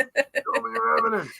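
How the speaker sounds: raspy, high, rough, challenging, demanding scream. Retelling watching paranormal videos at home: retelling screaming at the TV. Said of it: "I'm screaming at it".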